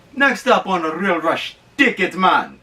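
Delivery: put-on Jamaican accent. Announcing the next movie segment of the show: put-on jamaican accent. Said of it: "I went with the Jamaican accent".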